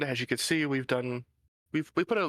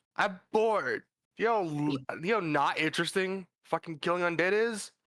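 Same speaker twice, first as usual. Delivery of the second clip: loud shouting, higher pitch; 5 semitones higher than usual. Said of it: "it will yell out".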